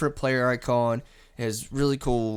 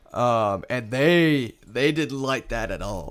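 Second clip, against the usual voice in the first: ordinary talk, nothing marked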